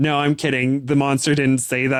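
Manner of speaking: normal talking voice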